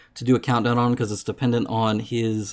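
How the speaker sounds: ordinary delivery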